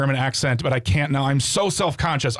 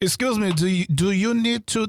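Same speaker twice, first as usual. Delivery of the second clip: put-on fake French accent; 6 semitones higher than usual. Putting on an accent that a listener calls french, french accent. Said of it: "That was pretty French".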